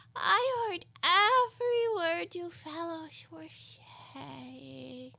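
hoarse, feeble, weak, thin, high-pitched raspy voice. Reading a story aloud, the sleepy Dormouse wakes and speaks: hoarse, feeble Dormouse voice. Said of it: "hoarse, feeble voice".

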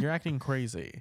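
ordinary delivery

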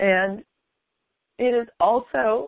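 emotional, drawn out slowly. Speaker talking to listeners, admitting they're getting emotional, getting emotional. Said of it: "I'm getting emotional here".

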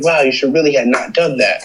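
mock passive-aggressive tone. Retelling how church members act when angry: imitating passive-aggressive tone. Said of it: "It's like passive, passive aggression".

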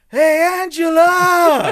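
very loud, very high shouted yell. Giving a shout-out to a Patreon supporter: shouting a greeting. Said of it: "I'm shouting!".

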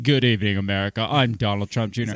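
deep, booming, projected voice. Imitating how Donald Trump Jr opened his speech: imitating Donald Trump Jr's deepened voice. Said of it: "He was like".

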